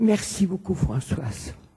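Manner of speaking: audibly moved, touched, emotional voice. Closing her remarks, a guest thanks the host by name: moved, emotional. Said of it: "je suis émue".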